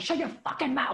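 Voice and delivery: put-on angry yelling, high-pitched. Retelling kicking the door down at someone who mocked an accent: imitating own angry yelling. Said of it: "I can't believe you're yelling at me".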